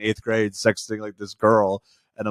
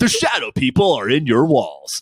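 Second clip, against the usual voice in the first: loud, belted party DJ host announcing voice; 3 semitones higher, 5 dB louder than usual. Imitating the dj host on an album who brings nukes to the party: imitating the album's dj host.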